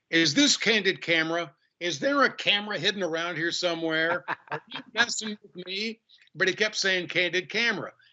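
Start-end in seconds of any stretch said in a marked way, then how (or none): none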